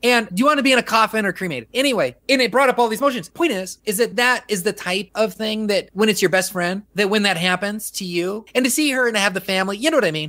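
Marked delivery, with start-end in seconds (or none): 0.3-1.7 mock insensitive, blunt, tactless, matter-of-fact tone. Retelling what the hospice lady asked the family: imitating someone speaking way too loud. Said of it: "the way she said it was way too loud".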